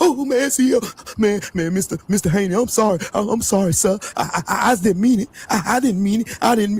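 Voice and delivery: put-on scared, stammering, apologetic tone. Mocking a boxer who is scared of Devin Haney: imitating a scared Tiger Johnson. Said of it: "is scared of Devin Haney's shadow".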